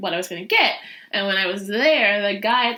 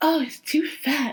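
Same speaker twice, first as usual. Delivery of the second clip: put-on mocking snobby tone, higher; 6 semitones higher than usual. Retelling how mom mocked the remark about the dog: imitating a mocking snobby tone. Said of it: "mocking me and saying it in a snobby way".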